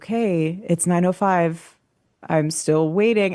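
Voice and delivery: ordinary talk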